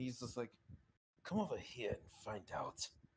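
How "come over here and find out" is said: angry, spoken through gritted teeth. Voicing Kitsune, who grits his teeth: through gritted teeth. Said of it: "Kitsune understandably grits his teeth".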